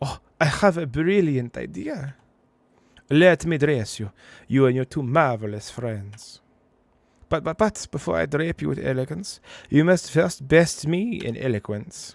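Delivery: very loud, fake, put-on French accent. Voicing a game character in a beret: put-on French accent. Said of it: "We're sending with the French accent".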